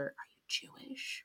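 soft, breathy, nosy whisper. Retelling how people leaned in close to ask: imitating a whisper. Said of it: "they'd get in real close and they'd whisper".

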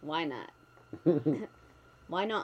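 put-on unbothered, matter-of-fact, deadpan delivery. Acting out how she will react when she looks up: imitating her deadpan. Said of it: "sort of deadpan".

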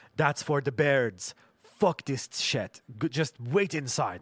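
put-on Iranian-accented English in an old woman's voice. Retelling the grandmother's warning during the possum story: imitating grandmother's Iranian accent. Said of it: "in her accent".

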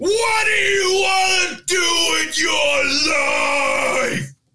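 very high, drawn-out hollered yell. Retelling a music video where a man yells at a kid: imitating someone yelling. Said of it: "he yells at this little kid and is like".

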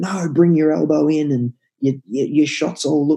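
put-on yelling. Retelling a shooting coach correcting a player: imitating a coach yelling. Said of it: "this German coach is just yelling at him".

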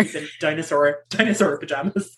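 ordinary talk

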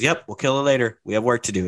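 plain

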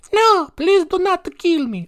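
very high fake Italian accent. Acting out a kid's reply in a Russian prank video: put-on Italian accent. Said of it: "I don't know why they're Italian".

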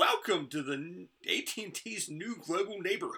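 play-acted high-pitched announcer scream, kept light. Recalling a woman's voice at a ride's exit, retelling a scream. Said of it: "she screamed like".

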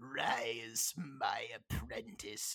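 low, deep, dropped commanding voice. Imagining the season's last scene: Palpatine impression. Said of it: "Palpatine's gonna be like".

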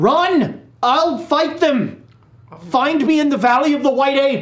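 high, loud yell in a wizard voice. Voicing a character who holds off enemies for the others: character yelling. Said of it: "as he yells".

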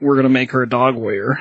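ordinary talk

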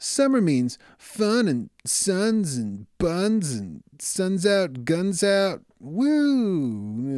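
put-on animated cartoon voice, high and sing-song. Trying out a new summer cartoon character: put-on cartoon voice. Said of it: "Do you like that voice? It's new. It's my new summer cartoon character".

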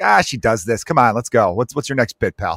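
normal talking voice

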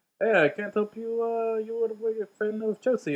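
put-on failed French accent. Speaker retells what the guy at the counter said, bad French accent. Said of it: "Why do you make everybody Russian?".

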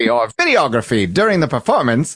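put-on old-timey announcer voice. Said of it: "in an old-timey voice".

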